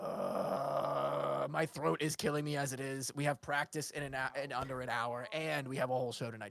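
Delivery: low rumbling voice. Voicing a big Dragonborn in a game scene: rumbling voice. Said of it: "he rumbles".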